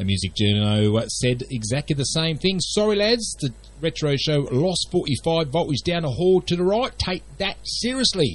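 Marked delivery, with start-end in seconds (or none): 2.6-8.4 high, very bad Cockney accent. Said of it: "In my worst Cockney accent".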